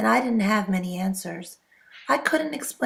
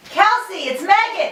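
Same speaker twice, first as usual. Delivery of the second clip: yelling, higher and louder; 10 semitones higher, 7 dB louder than usual. Calling out to kelsey in an empty house: shouting. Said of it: "What are you shouting at?".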